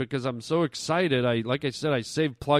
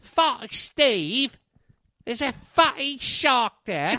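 very high-pitched put-on British accent; 10 semitones higher than usual. Saying the line again because it sounds less frightening British: British accent. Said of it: "when you say it in a British voice".

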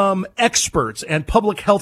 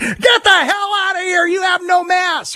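very high, shrill, frantic shriek; 13 semitones higher than usual. Retelling how shoppers react to someone without a mask: imitating someone screaming. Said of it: "they're screaming at you saying".

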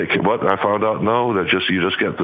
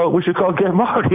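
put-on English accent, tongue in cheek, pitched up; 10 semitones higher than usual. Remembering a woman who passed away, speaker quotes her in a put-on English accent. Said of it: "with the English accent".

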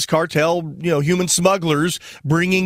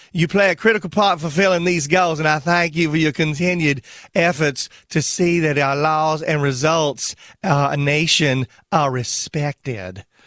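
playful, goofy put-on speaking voice. Reading a warning from the Attorney General aloud: Jeff Sessions voice. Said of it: "I'm gonna do it with Jeff Sessions' voice".

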